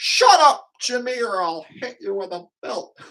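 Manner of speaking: very high, shrill, loud made-up granny character voice. Voicing a made-up grandma snapping at Jimmy for a joke: made-up grandma character voice. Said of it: "just a character I made up".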